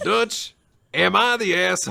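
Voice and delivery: loud cowboy outlaw voice with Western accent. Joking with a co-host, in the Red Dead Redemption voice. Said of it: "It's just the Red Dead Redemption voice".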